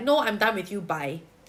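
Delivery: ordinary talk, nothing marked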